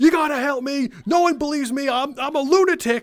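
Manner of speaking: acted-out yelling, high and drawn out. Retelling how she was yelling at people at Geek Squad: imitating someone yelling. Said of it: "yelling at people".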